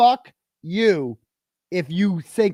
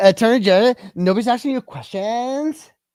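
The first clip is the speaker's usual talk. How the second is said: squeaky, pitched-up high-talker voice; 4 semitones higher, 4 dB louder than usual. Replaying what she said to a testifying officer, in her high talker voice. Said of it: "She even does the high talker voice".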